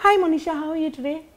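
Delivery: put-on very high, youthful young-man voice. Demonstrating voice acting, sounding like a very young guy. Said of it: "suppose you have to sound like a very young guy".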